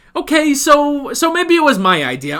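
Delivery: put-on high-pitched Brooklyn accent, pitched way up, Brooklyn vowels. Recapping a scene from the show, voicing Saul in a Brooklyn accent. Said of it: "I sort of give uh, Saul more of a Brooklyn accent".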